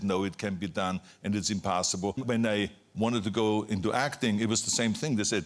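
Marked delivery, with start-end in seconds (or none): none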